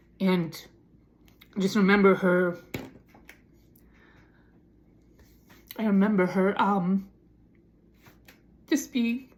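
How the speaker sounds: crying while talking, tearful voice. Remembering someone being broken down as a child, crying while talking. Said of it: "I'm not sorry for these tears".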